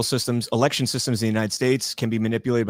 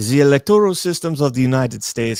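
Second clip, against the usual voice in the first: loud, put-on Russian accent over English words; 3 semitones higher, 6 dB louder than usual. Reading a scripted question aloud, in a Russian-sounding accent. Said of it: "why am I Russian?".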